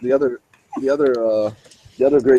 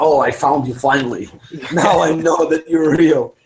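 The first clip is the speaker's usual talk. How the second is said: put-on thick Finnish accent, pitched up; 4 semitones higher than usual. Acting out a dude who kicks in your door: heavy finnish accent. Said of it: "with a heavy Finnish accent".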